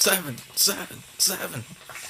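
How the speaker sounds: high put-on call on seven.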